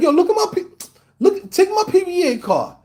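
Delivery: put-on superior, self-important tone. Retelling how a man talked to cops: imitating someone acting superior. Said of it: "like he's the, the superior".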